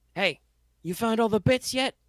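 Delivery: mock very high, rising, projected shout. Voicing a character asking the engineers about the recovered parts: shouting across to someone. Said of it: "he shouts over".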